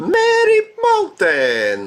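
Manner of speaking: high, swooping shout in an Italian accent. Player calls out the chosen level: Mario-style Italian accent shout. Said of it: "in his Italian accent".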